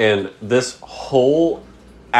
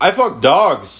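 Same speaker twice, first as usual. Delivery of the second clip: mock loud, high, blurted yell; 5 semitones higher than usual. Retelling shouting out a car window at new neighbors: imitating own loud shout. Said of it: "Like, real loud".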